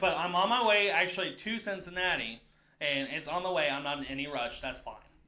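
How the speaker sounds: ordinary talk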